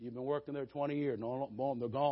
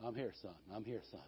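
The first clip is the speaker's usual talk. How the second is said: still, small, barely-there hushed voice; 5 semitones lower, 11 dB quieter than usual. Retelling hearing God speak in a hard moment: still small voice of God. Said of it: "you hear that still small voice".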